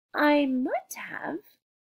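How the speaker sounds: slyly evasive tone. Asked if they've never had hot chocolate, the narrator replies, sly. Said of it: "I said slyly".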